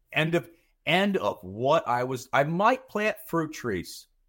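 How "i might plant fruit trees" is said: strong stress on MIGHT, lifted high and slow. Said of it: "I wanna emphasize the word might".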